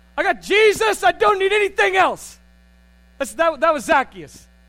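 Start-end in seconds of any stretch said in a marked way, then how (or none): 0.2-2.4 mock joyful tone, much higher, louder. Retelling a Bible story, the speaker acts out Zacchaeus receiving Jesus, joyfully.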